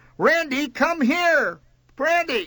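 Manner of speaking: long, drawn-out yell pitched very high. A woman with her finger stuck in a shoe calls for randy, yelling. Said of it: "she yelled".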